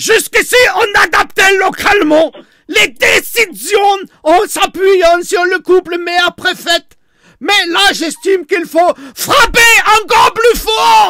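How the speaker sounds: yelled, very high, caricatured German accent.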